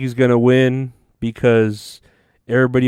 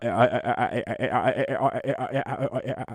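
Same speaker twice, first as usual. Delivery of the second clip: very slow, rasping, grating repeated stutter; 11 dB quieter than usual. Imitating RFK Jr. stammering over his words: RFK Jr. voice impression. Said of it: "a big file being ran up and down your esophagus".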